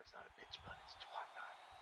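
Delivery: soft, voiceless, hushed whisper.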